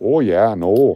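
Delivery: relaxed, easygoing put-on Canadian accent. Speaker trying out an accent and asking listeners what they think, in a canadian accent. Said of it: "My Canadian accent".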